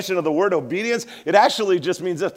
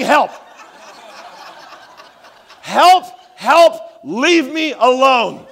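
very slow, loud, stretched-out screaming; 6 semitones higher, 7 dB louder than usual. Retelling a little boy screaming at the speaker at airport security, imitating a boy screaming. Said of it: "he just starts screaming".

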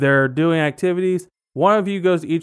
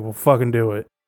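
put-on grouchy, tired voice, lower; 6 semitones lower than usual. Acting out a tired factory-worker dad coming home: imitating a grumpy, tired dad. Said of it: "He's a little grumpy".

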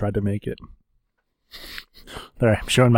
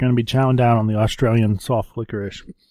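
ordinary talk

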